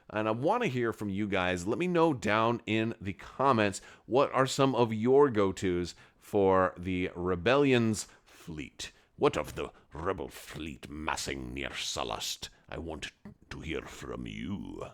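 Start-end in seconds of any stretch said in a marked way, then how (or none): 9.2-14.9 very low, hushed, put-on Scottish accent. Asking viewers for their comments, in a Scottish emperor voice. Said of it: "I don't know why I'm doing that voice".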